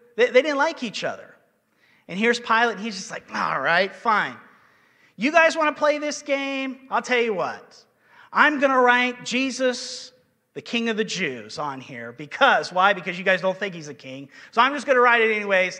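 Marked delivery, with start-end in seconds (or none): 3.3-15.8 mock taunting, sarcastic, swooping sing-song. Retelling Pilate answering the chief priests: imitating Pilate's sarcasm. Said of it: "a bit of sarcasm that he's putting on".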